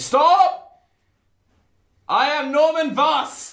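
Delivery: dramatic call-out. Playing a character who calls out from the bathroom: dramatic call-out.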